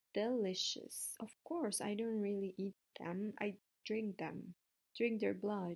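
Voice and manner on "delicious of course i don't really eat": ordinary delivery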